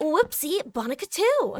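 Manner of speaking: put-on anime protagonist voice. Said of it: "do the anime pro tag voice".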